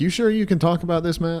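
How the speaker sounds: mock, high-pitched, heavily sarcastic tone. Retelling a question asked over the show notes: imitating a hyper sarcastic tone. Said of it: "Ben is being, like, hyper sarcastic".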